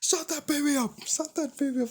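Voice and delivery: very high, shrill, angry shouted yell. Mocking people who yell about a crying kid, imitating someone yelling. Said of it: "then yell about it like".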